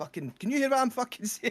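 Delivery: put-on, shrill, very high, loud yelled shout. Retelling a man at a comedy show shouting to a woman in the front row. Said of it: "He's shouting to the".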